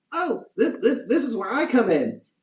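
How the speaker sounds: very high, piping, squeaky voice. Narrating a scene as a voice calls out from behind the listeners, squeaky Squirt voice. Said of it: "you hear a squeaky voice from behind you say".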